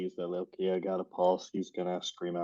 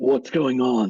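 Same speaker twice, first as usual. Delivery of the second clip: sudden loud alarmed scream, pitched up; 5 semitones higher, 6 dB louder than usual. Voicing a character rushing out to a door being smashed: screaming out. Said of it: "immediately screams out".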